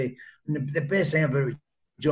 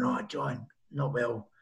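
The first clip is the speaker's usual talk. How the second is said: feeble put-on sick croak, soft and slow; 3 semitones lower, 6 dB quieter than usual. Retelling phoning in to John, the speaker puts the voice on: put-on sick voice. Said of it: "So I put the voice on".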